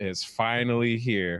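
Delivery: put-on passive-aggressive voice. Retelling what a woman said after a photo, mock passive-aggressive. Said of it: "with the most like passive aggressive tone of all time".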